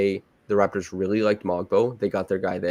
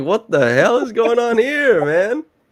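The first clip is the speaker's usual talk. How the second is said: put-on shocked disbelief, very high, rising outburst; 14 semitones higher, 6 dB louder than usual. Retelling how a traded player reacted on video: imitating a surprised player. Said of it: "He's surprised. He's like".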